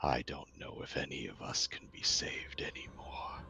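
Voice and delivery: quiet character voice. As Stone runs away, answering Venisi's question: very quiet, under breath. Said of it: "he just just says very quietly".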